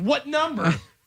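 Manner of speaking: put-on very high, shrill, nasty, mean yell. Retelling the agent's question again, imitating someone yelling meanly. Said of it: "Don't yell at me".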